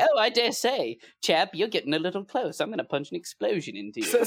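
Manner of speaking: very proper dandyish voice. Describing an ally, speaker imitates him in a very proper, foppish voice. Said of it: "He was very proper and like foppish".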